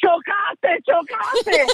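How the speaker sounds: sudden, high-pitched, mock alarmed shout. Retelling hitting car mirrors while driving, imitating a brother shouting. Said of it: "mi hermano empieza a gritar".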